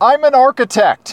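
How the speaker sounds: high, loud yell. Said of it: "What you should do is yell".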